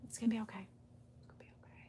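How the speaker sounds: soft, soothing, whispered murmur.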